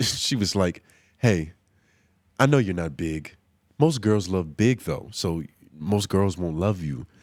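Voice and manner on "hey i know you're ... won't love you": deep, sultry voice. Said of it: "in a real sultry, cold calling voice".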